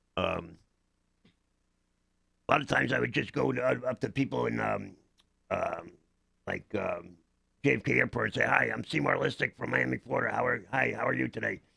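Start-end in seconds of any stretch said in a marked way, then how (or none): 8.4-11.5 put-on rough, lusty character growl voice. Walking up to strangers at JFK Airport to introduce oneself, lusty growl character voice. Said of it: "I used to love doing the voice".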